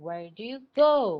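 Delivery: heavy emphasis landing on "go". Showing the stressed word in a simple question, stress on "go". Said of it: "So stress word is go in the sentence".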